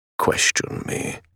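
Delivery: voice dropped. Narrator reads a father cutting off his daughter's question, voice lowered. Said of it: "his voice lowered".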